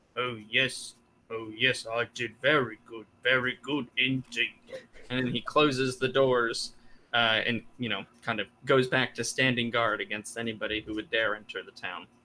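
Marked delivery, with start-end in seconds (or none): 0.2-4.6 mumbled and muttered under the breath. Game master voices a guard muttering to himself as the players walk away. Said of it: "you kind of hear him muttering to himself".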